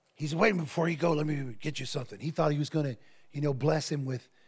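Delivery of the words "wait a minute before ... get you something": put-on, gravelly, old-time preacher voice. Retelling how a preacher stopped the driver at the hotel, in a gravelly T.L. Lowry voice. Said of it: "He's real gravelly voice".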